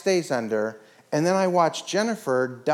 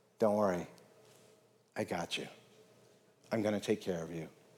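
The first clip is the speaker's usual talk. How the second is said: gentle, very hushed, very low murmur; 8 semitones lower, 11 dB quieter than usual. Retelling what she whispered in his ear after swimming to him, said very softly. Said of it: "I very softly said".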